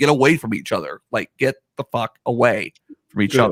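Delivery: normal talking voice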